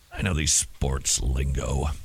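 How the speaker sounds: put-on voice dropped very low, slow. Claiming to know sports lingo, in a mock deep voice. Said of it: "he said with a mock deep voice".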